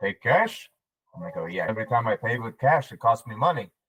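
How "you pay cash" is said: put-on thick, heavy Austrian accent, laid on. Retelling how he teased cashiers, imitating Walter's heavy Austrian accent. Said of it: "heavy Austrian accent".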